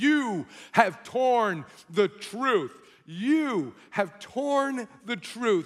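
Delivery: very loud, slow, thundering, drawn-out booming shout. Retelling a story of a voice filling a room: imitating a loud shouting voice. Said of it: "the loud voice filled my entire room and just shouted".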